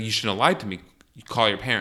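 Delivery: normal talking voice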